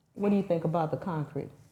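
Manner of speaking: hushed, secretive half-whisper. Retelling a question asked while the inspector walked away: retelling a half-whisper. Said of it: "I whispered to Cheyenne".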